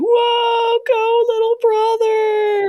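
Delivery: very high, slow cheering yell, long whoa. The speaker recalls cheering at their little brother's graduation, imitating a scream. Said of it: "I was screaming so loud".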